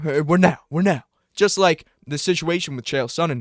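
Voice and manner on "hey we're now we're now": put-on rowdy voice, higher pitch. Recalling a cellmate angry about borrowed headphones, rowdy Silva impression. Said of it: "he'd be getting rowdy".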